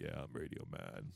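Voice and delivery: very deep, slow, breathy murmur. Imitating another speaker coming in as Radio Man: imitating a voice dropped octaves. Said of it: "Voice is gonna drop a couple of octaves".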